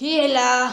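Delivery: loud, heavy, gruff big bad wolf voice. The wolf, waiting in grandmother's bed, answers a knock at the door in a big gruff wolf voice. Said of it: "la grosse voix du loup".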